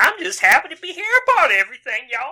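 high put-on cartoon voice. Choosing a voice to lean into for a role, Sandy Cheeks voice. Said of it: "I think I'm going to lean into kind of a Sandy Cheeks voice".

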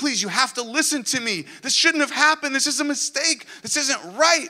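put-on desperate sobbing plea, very high. Retelling begging for someone in the children's court lobby, retelling a sobbing plea. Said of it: "I'm sobbing, and I'm begging for someone".

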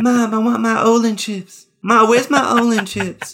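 put-on high-pitched voice playing a small boy. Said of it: "I gave you a [name] voice as a kid".

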